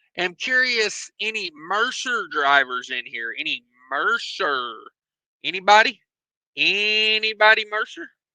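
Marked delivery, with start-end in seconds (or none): none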